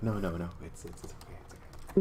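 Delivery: soft, profusely apologetic tone. Acting out a woman's reply to an apology, acting out a very apologetic reply. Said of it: "very very apologetic".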